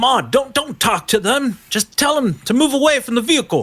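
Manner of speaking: high-pitched, shouted call-out. Voicing a character telling a companion not to talk: shouting out. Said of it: "Kenneth kinda shouts out and says".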